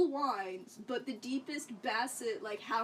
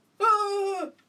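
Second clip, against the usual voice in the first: put-on high, loud yelling in old-man voice. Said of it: "Like an old man".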